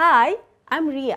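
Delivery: pitch falls away on "Ria". Teaching english intonation, demonstrating an introduction with falling intonation. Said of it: "This is also a falling intonation".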